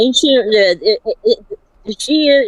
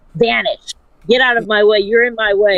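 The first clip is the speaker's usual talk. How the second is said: plain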